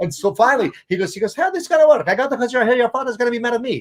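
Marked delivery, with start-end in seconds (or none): 1.3-3.8 put-on Italian accent in a raised, higher pitch. Retelling what a barber said about a haircut: imitating an Italian barber. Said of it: "he was this Italian guy".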